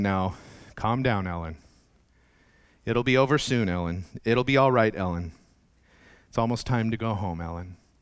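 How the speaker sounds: mock mother voice, low, steady, very calm and soothing. Retelling how a mother spoke to her screaming daughter in a store: imitating a very calm mother. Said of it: "very calmly saying".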